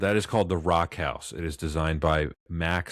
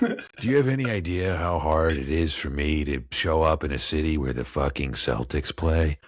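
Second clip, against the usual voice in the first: put-on movie star drawl; 2 semitones lower than usual. Voicing a movie star who hates Boston: Jack Nicholson impression. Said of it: "I think I got close".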